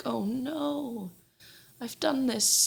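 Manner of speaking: very slow, high, drawn-out fake remorse. Retelling a defendant's false reaction in court: mocking Susan's fake remorse. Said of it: "she's just putting on an act of".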